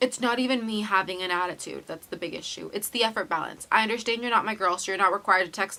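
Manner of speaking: normal talking voice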